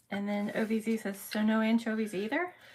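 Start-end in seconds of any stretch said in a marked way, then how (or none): none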